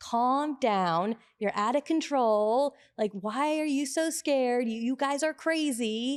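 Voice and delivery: mock pilot voice, high-pitched, yelling rant. Retelling a book's analogy about pilots in turbulence: imitating a pilot yelling. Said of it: "the first pilot starts yelling at you".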